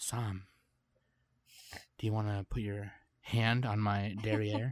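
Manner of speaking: very slow, stretched-out, drawn-out delivery. Asked by another speaker to say it slow, the speaker addresses Sam: said really slow. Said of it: "I'll just say it like real slow".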